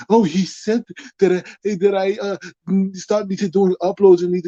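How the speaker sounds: imitated mock-whiny crybaby voice. Addressing someone who took criticism badly, quoting him: mocking whiny imitation. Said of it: "You sounded like a little baby".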